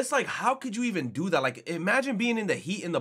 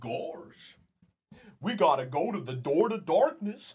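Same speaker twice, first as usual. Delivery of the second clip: silly, goofy cartoon dog character voice; 2 semitones lower than usual. Talking about doing voices, speaker shows how he'd sound in Goofy voice. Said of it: "I do a fucking Goofy impression".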